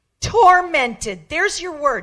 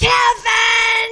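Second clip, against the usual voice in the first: mock high, long, drawn-out stretched scream; 9 semitones higher than usual. Telling of a dream, she re-enacts screaming her husband's name: retelling screaming a name. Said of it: "Then I started screaming".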